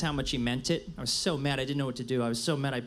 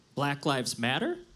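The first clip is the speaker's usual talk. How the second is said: upturn on matter, rising like a question. Joking about accidentally adding a question mark: rising on 'Matter' like a question. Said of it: "you accidentally put a question mark on the end".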